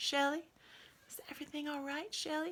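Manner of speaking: put-on serene Southern accent. Retelling Shay coming upstairs to check on her, in Shay's southern accent. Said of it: "she comes up in her southern accent".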